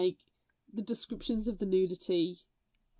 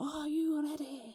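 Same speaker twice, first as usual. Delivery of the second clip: soft, pitched-up, ropey fake Scottish accent; 6 semitones higher, 7 dB quieter than usual. Recalling the Packmaster trials, the speaker imitates what she kept hearing: bad Scottish accent. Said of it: "a bad Scottish accent going".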